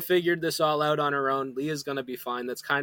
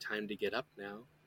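half-whispered, barely audible; 6 semitones lower, 13 dB quieter than usual. Retelling how the mother speaks in a scene: imitating a half-whisper. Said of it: "the mother is only whispering".

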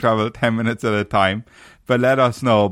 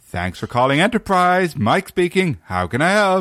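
grating fake American accent, high-pitched and annoying; 7 semitones higher than usual. Retelling how he used to answer the phone at work: annoying put-on american voice. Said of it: "I used to do this really kind of like annoying American voice".

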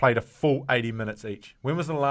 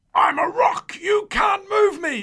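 very high, slow, drawn-out, stubborn holler; 7 dB louder than usual. Telling a rugby scrum story, imitating a teammate yelling. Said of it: "He's just yelling out loud".

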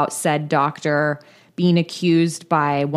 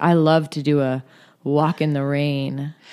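put-on lecherous tone, lower; 2 semitones lower than usual. Retelling a doctor's small talk with a patient, imitating a horny tone. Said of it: "the way he says it is like very like horny".

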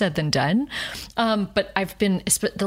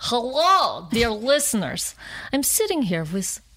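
put-on thick Russian accent, in character. Improvising as the character Zoya, greeting the listeners in a Russian accent. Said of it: "Introduce yourself with your Russian accent".

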